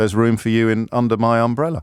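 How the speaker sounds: ordinary talk, nothing marked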